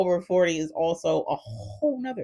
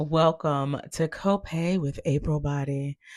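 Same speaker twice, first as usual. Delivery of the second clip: slow, put-on radio presenter announcer delivery; 3 semitones lower than usual. Speaking a show welcome line into a microphone, in a radio voice. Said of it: "I immediately turn on a radio voice".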